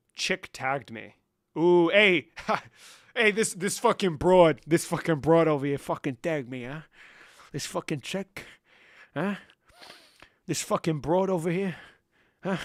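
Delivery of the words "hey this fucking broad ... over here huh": tough gangster-style voice. Reading chat, a speaker reacts to being tagged, doing a Tony Soprano voice. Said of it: "Fucking Tony Soprano here".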